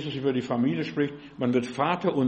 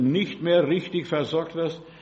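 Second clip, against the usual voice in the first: slow nicht mehr richtig versorgt, weighted stress on mehr. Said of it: "und ich betone".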